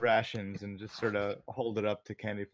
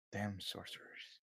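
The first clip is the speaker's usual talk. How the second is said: very quiet, whispered mutter under the breath; 14 dB quieter than usual. Nork reacts after a robed figure leaves through a portal, muttered under his breath. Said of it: "kind of say under his breath".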